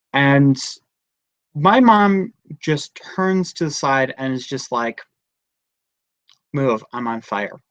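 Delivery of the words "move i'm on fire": mock soft, totally calm, matter-of-fact delivery. Retelling how mom announced she was on fire: imitating a calm remark. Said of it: "Literally that calmly".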